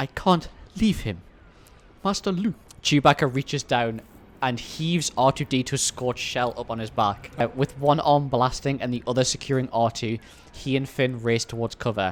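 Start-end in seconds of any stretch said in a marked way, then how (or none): 0.0-2.5 higher robot voice with real feeling. Narrating a scene with Chewbacca and R2-D2, line in an emotional C-3PO voice. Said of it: "The reason why I do that voice".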